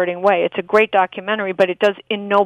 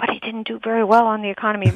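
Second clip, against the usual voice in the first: whispered aside. Retelling how he heard this footnote about the president, in a whispered aside. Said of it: "in kind of a whisper".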